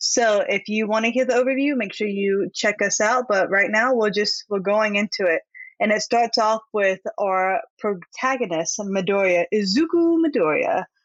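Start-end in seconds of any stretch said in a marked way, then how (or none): 9.5-10.8 pitched-up, announcer-style voice. Show host introducing the series' protagonist by name, in an announcer voice. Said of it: "to like say the my announcer voice".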